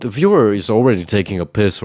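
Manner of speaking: normal talking voice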